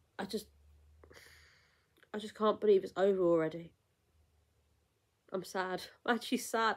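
on the verge of crying. Sad that the festival is over, holding back tears. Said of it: "I'm trying not to cry".

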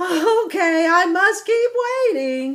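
very high, loud, laughing delivery. Ilex Ibex replies while waiting for Papa Ibex, laughing. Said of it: "laughed Ilex Ibex".

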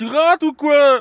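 slow, loud, high yell.

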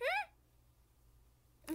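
very high squeaky hmm, voice jumping up. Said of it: "Why did my voice go so high?".

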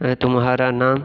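normal talking voice

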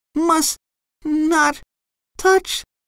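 feeble, weak, very high-pitched voice. Reading SpongeBob as Patrick keeps urging him, weak murmur. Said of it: "SpongeBob murmured weakly".

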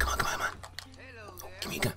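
whispered under breath, pleading tone.

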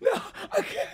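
high, breathless, helpless laughing fit. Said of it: "I'm gonna run out of breath. I'm losing my voice".

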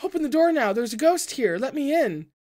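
high, shrill, very loud terrified shriek. A woman outside a door begs to be let in: shrieking at the top of her lungs. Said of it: "the woman shrieked at the top of her lungs".

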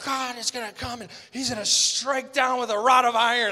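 loud, screaming fire-and-brimstone preacher's cry. Retelling the end of a message once preached: imitating own past screaming.

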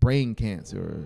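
plain reading voice

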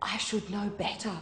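soft, hushed, half-whispered voice. The narrator answers the one who spoke to her, half-whispering. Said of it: "I whispered back to Spoon".

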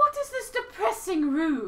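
put-on stuck-up old lady voice. Taking over Sakuya's lines from another speaker, in Sakuya's stuck-up rich lady accent. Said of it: "what was the voice again?".

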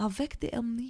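put-on bad French accent. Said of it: "My French accent is very bad right now".

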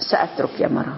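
ordinary talk

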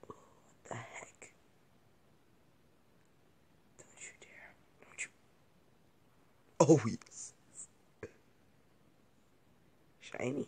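hushed, slow whisper under the breath. Playing a game while the only one awake, speaking quietly. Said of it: "Just trying to be quiet".

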